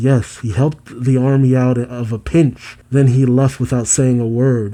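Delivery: ordinary talk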